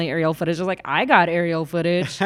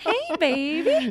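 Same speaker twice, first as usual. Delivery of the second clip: put-on Southern accent, pitched very high; 10 semitones higher, 4 dB quieter than usual. Showing off some Southern accents: Southern American accent. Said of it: "If you want to hear some Southern accents, wanna, here it goes".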